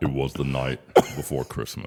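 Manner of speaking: low, deep voice. Asked by the host to speak into the microphone for the ladies at home, in a deep voice. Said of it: "love having you on because of your deep voice".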